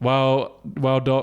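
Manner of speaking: put-on stuttering, stammering speech. Telling a joke, voicing the patient's reply: imitating a stutter. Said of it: "in the stutter".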